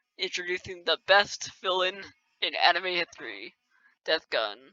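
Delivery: openly sarcastic, fake-sweet, swooping sing-song. Ranking anime arcs and naming a villain: sarcastic. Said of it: "I'm being sarcastic if you can't tell".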